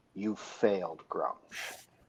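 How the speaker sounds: barely audible, very quiet, close whisper. In a role-play, a character speaks the last words someone dying hears, whispering. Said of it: "and whisper and whisper in common".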